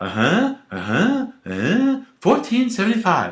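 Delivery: sing-song, swooping, animated put-on Chinese accent. Retelling a friend's bit about cops checking warrants, in J C's Chinese accent. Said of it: "used to do this in a Chinese accent".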